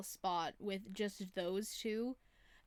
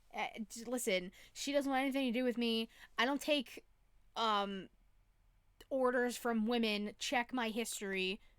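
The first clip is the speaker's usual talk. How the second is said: normal talking voice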